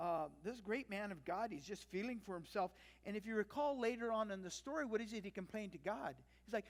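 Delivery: ordinary delivery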